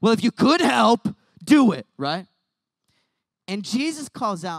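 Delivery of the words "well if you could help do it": loud, sarcastic, snarky delivery. Retelling the father's words once more: imitating a snarky remark. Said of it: "too sarcastic and snarky".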